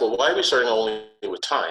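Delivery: ordinary talk, nothing marked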